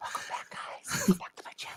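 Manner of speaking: breathy, unvoiced whisper. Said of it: "I'm like".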